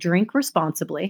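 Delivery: ordinary delivery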